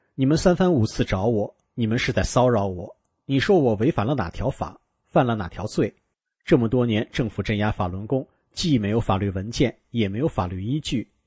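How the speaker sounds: ordinary talk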